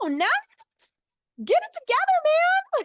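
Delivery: very high, loud, piercing put-down. Retelling an annoying guy's reply, the speaker mimics him in a super high-pitched voice. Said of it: "Like that's exactly how he sounded".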